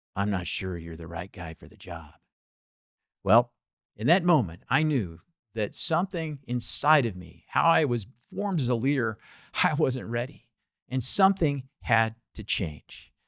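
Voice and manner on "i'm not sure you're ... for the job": low, hushed, mobster-style gangster half-whisper. Retelling what a man told the speaker after a pause, half-whispered gangster voice. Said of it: "in a gangster voice, he kind of whispered".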